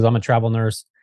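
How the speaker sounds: normal talking voice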